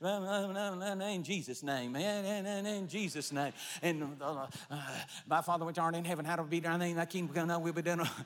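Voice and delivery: fast, run-together, rattled-off auctioneer-style mumble. Speaker showing how someone mumbles through a prayer, mumbling like an auctioneer. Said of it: "And you sound like an auctioneer".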